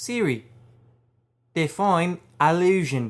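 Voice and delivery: imitated Australian accent. Asking a phone assistant set to Australian for a definition, in a put-on Australian accent. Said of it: "so I have to ask with an Australian accent".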